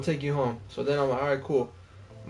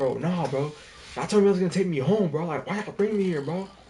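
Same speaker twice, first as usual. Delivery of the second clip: play-acted irritation, fed-up, getting a little mad; 3 semitones higher than usual. Retelling what the speaker told a drunk group that dragged them along, mock-irritated. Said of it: "I started getting a little mad".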